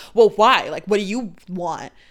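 mock prickly, defensive tone. Retelling how he answered after she agreed: imitating a defensive tone. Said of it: "he got all defensive and was like".

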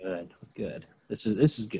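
put-on approving host voice. Acting out a scene: imitating Chris Harrison approving while writing. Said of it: "He goes".

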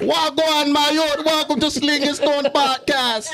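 mock Jamaican accent, high and slow.

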